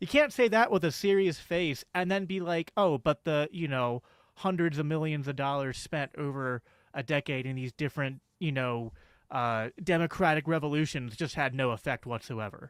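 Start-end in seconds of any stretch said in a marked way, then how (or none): none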